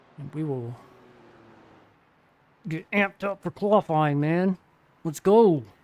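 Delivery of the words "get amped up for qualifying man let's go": very loud, angry-sounding bark. Streamer puts the headset on right before qualifying, sounding mad. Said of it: "Sorry, I sound mad".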